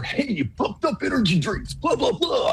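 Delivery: very high, corny, cheesy announcer pitch. Describing the radio ads they noticed, in a cheesy radio announcer voice. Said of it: "this really cheesy radio voice".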